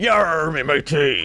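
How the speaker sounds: put-on stock pirate voice. Speaker trying out a practice line in a pirate voice. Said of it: "Just need to practice on my pirate voice".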